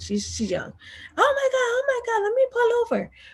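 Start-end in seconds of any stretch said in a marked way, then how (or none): 1.2-3.1 put-on screaming at very high pitch. Retelling the marketing coordinator's reaction on the phone: imitating someone screaming.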